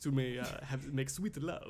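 put-on Transylvanian vampire accent. Acting out Card inviting Mara to his chamber: Transylvanian vampire accent. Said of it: "Why is Card from Transylvania all of a sudden?".

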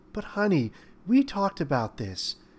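tender, affectionate, warm, slightly high tone. A woman answers her fiancé's confession about hiding something at work, speaking warmly. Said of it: "his fiancée said warmly".

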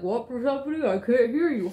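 mock talking with mouth full. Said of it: "Could you please not talk with your mouth full?".

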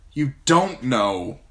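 resentful, bitter tone. A young man answers the old man who has just spoken to him, bitterly. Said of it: "John said bitterly".

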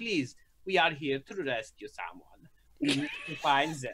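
low put-on German accent, attempting a kind tone. Player's character kneels, hand on someone's shoulder: german accent. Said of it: "hard to sound like nice in a German accent".

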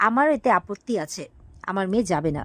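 plain

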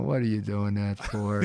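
ordinary talk, nothing marked

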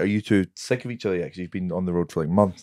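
ordinary talk

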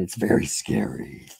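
low, creepy put-on voice.

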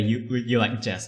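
ordinary delivery

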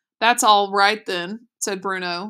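ordinary delivery

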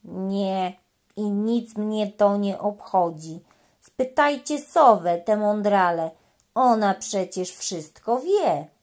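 slow, utterly bored. The frog, rocking lazily on a lily pad, answers the little elephant, very bored. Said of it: "Była tak bardzo znudzona".

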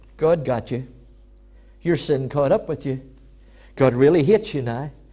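sly, subtle, very deep voice. Speaking about the enemy's disguises, acting out the enemy's subtle voice. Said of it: "He comes with a subtle voice and said".

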